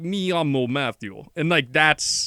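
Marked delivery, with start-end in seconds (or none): 0.0-1.2 Spanish-sounding words in put-on Russian accent. Showing a listener what Romanian sounds like: Romance words, Russian accent. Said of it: "but with a, a Russian accent".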